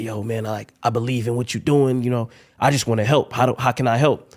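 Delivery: put-on raspy voice. Recounting a dinner meeting where Gotti offers to help: Gotti impression, raspy voice. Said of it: "Gotti has this raspy voice".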